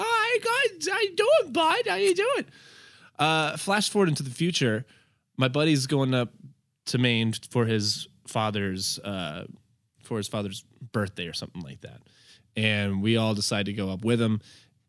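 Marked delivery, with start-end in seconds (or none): 0.0-2.5 very high, goofy put-on voice, silly accent. Showing the funny voice he started doing back then: funny put-on voice. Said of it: "So then I started doing the voice".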